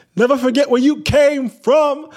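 very high, loud yell. Retelling how a friend yelled at a passing car: imitating a friend yelling, deep voice. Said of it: "Nikki yelled out from the street".

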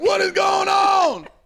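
mock, very slow, very high, drawn-out shout. Retelling yelling alone in the studio: imitating own yelling. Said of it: "just yelling, like".

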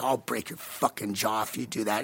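put-on, deadly serious tone. Retelling a threat made during an argument: retelling a dead serious threat. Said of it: "he knew I was dead serious".

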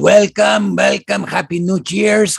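exaggerated guapo voice. Showing a friend how the guapo voice should be done, in an exaggerated guapo voice. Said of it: "You got to do it like this".

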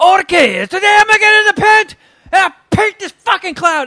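rough, brash, very loud, high aggressive bellow. Recalling a painter on a painting show, as a loud aggressive italian painter impression. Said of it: "I'm pretty sure he was Italian because he was like".

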